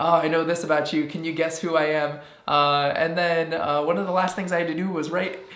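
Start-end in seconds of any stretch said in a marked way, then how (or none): none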